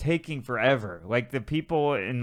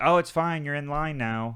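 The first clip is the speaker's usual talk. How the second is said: put-on, dry, passive-aggressive sarcastic tone; 3 semitones higher than usual. Retelling what he said after being asked about a line cut: imitating a sarcastic reply. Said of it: "the sarcastic response".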